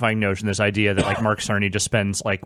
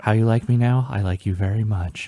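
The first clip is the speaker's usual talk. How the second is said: mock whisper, acted rather than real. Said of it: "Just him whispering".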